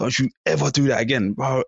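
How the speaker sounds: put-on high-pitched, stern scolding yell. Retelling being told off on the motorway shoulder: imitating someone yelling. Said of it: "he turned around and he yelled at me".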